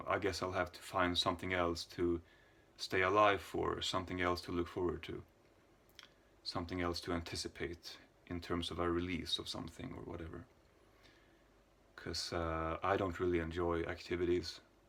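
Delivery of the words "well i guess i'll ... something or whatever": ordinary talk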